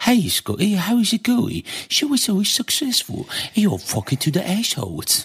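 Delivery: put-on posh Oxford accent, very high, swooping. Performing a comedy bit about Oxford English: Oxford English accent. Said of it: "das ist dieses fucking Oxford-Englisch".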